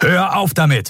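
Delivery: sudden, loud, high-pitched shouted outburst. Narrator reads one character cutting another off, loud outburst. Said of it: "Telios Lautstärke ließ Nelen zusammenfahren".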